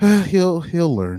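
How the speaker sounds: weary sigh, pitched high, words breathed out. Retelling own past reaction to a debate with a sigh: sighing. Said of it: "it was just like a sigh".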